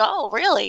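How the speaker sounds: playful, joking, knowing tone. Retelling a character's reply in a holding cell scene: imitating a joking tone. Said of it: "Kind of like a jokingly".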